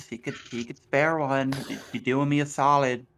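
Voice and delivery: whispering. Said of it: "I'm whispering".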